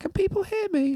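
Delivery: tiny, very high, timid, posh, mousy squeak. A dj retells a girl asking to speak into the mic: imitating a posh, timid mousy voice. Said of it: "such like a posh, timid little mousy voice".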